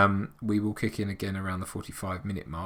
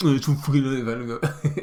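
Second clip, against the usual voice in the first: weak put-on voice, higher, much slower; 5 semitones higher, 5 dB louder than usual. Imagining what Richard would say about the film: bad Richard impression. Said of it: "that's not a very good impression of Richard".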